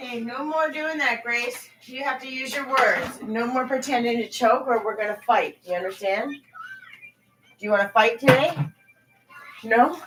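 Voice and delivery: high-pitched scolding, mother voice. Telling a child to stop pretending to choke: scolding a child. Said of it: "Sound like I'm beating up my kid".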